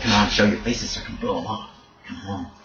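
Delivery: muttering under the breath. Voicing a character who is just watching, muttering under his breath. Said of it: "He's muttering under his breath".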